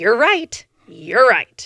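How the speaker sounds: acted, very loud, cutting, swooping sarcasm. Retelling how Jeremy used to answer when drunk: imitating Jeremy's sarcastic tone. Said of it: "his sarcastic, very, like, knife to the heart".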